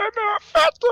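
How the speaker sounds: badly put-on child voice, very high and loud.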